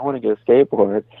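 tearful, crying, pleading voice. Retelling begging a friend for a skateboard as a kid: imitating own past crying. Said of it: "I'm on my bike and I'm crying".

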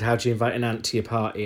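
plain

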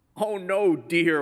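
condescending, patronizing voice. At church camp, a volunteer corrects the narrator's place settings, imitating a patronizing tone. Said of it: "one of the volunteers corrected me in a patronizing tone of voice".

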